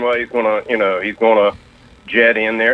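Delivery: ordinary talk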